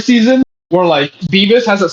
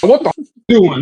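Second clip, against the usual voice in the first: mock cartoonish Texan voice. Imitating a cartoon character with the same voice: Hank Hill voice. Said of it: "they have, like, the same voice".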